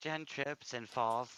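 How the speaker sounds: strange, loud, high, disembodied weird voice. Voicing a voice from out of nowhere to the players: really weird voice. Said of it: "really weird voice out of nowhere say".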